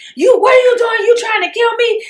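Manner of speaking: loud high-pitched yelling. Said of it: "So he yells".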